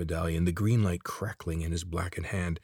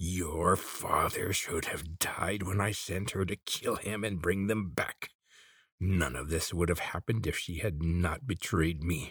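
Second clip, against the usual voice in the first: trembling voice shaking with fury and rage; 4 dB quieter than usual. An old man strikes a man with his medallion's spark and speaks, shaking with rage. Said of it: "voice was shaking with rage".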